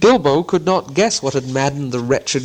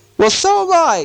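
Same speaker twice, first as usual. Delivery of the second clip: high-pitched exclaimed cry; 4 dB louder than usual. Narrator reads a lost character answering someone searching for something lost: cried out. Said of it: "cried Bilbo".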